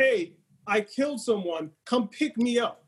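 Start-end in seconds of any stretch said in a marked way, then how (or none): none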